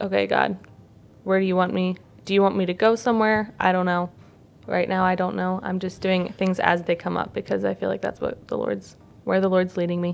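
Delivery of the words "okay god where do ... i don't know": normal talking voice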